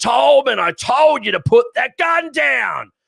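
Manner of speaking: in-your-face, high, drawn-out scream. Retelling how a man got right in another man's face, imitating screaming. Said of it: "He starts screaming".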